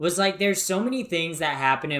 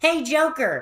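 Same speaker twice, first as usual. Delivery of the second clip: put-on annoying cat voice, higher and louder; 12 semitones higher, 5 dB louder than usual. Complaining about an annoying cat character, imitating Morgana. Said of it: "that stupid ass cat says".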